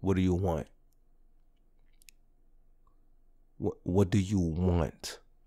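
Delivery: acted flat, unimpressed, straight-faced, low deadpan delivery. Retelling a teacher's reply to flattery: imitating a deadpan teacher. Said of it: "looking at me with a straight face".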